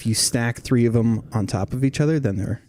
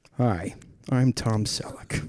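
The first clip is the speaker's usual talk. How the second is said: put-on slightly disappointed voice, quieter; 5 dB quieter than usual. Playing the newscaster Tom Selleck introducing himself: Tom Selleck impression. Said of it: "That is not how he talks".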